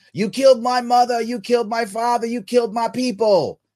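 high-pitched yell. Retelling a movie scene where the hero is beaten by the villain's goons; retelling a yell. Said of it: "yells at him".

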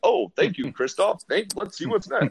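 very high, over-the-top, overblown radio announcer voice. Showing how first-time podcasters sound at the mic, overdone radio announcer voice. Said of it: "you get kind of an announcer voice".

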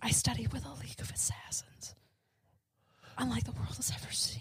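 bad, breathy, whispered superhero voice. Playing Batman answering about his training: bad Batman impression. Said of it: "You be Batman".

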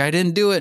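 high, begging, pleading voice. Retelling a movie scene where a jailed cat begs God for release: imitating a begging plea. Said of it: "he's begging and pleading with him".

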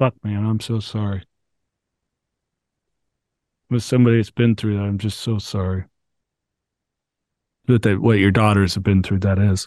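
overcome with emotion, pausing. Speaking to a parent about their daughters, choked up. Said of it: "Sorry, I need a second".

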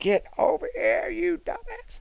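mock very high rising yell, rough-edged, creaky, drawn-out. Retelling how Emma screamed after a wrong turn on stage: imitating Emma screaming. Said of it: "Emma started screaming".

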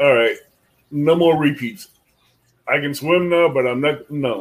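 usual speaking voice

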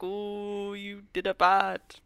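slow, put-on elderly man's scolding voice. Retelling a film scene where an old man speaks: imitating an old man. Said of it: "an old man is like".

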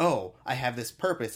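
normal talking voice

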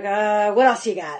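blunt, straight-talking New York voice. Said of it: "she's real New York".

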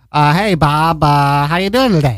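put-on Boston-accented voice. Acting out a short greeting skit, boston accent. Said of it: "in a Boston accent".

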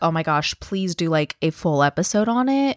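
plain

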